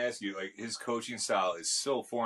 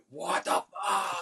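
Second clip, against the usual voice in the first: mock, shrill, very high screaming outburst; 9 semitones higher than usual. Telling about a dog rampaging through the house, retelling a scream. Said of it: "And then like I'm screaming".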